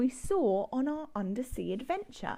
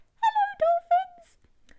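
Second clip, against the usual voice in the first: very high, very loud, piercing dolphin-like squeak; 8 dB louder than usual. Showing listeners how to speak dolphin, greeting the dolphins in a squeaky dolphin voice. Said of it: "nice and ear-piercing".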